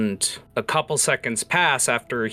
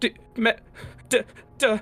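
put-on very high, slow, sobbing, stammering crying kid voice; 12 semitones higher than usual. Voicing a terrified crying child calling out to a player: sobbing child stuttering. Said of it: "stuttering as he's trying to speak".

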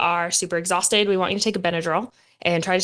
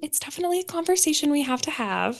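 gentle, sweet, pitched-up motherly tone; 8 semitones higher, 4 dB quieter than usual. Retelling a phone call, quoting her midwife's reply in a sweet midwife voice. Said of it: "in her sweet midwife voice".

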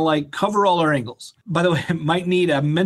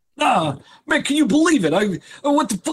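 put-on New York accent, much higher pitch; 8 semitones higher than usual. Showing how it will all sound, in a new york accent. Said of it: "it's all going to be in a New York accent".

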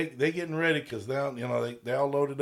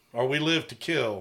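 ordinary talk, nothing marked

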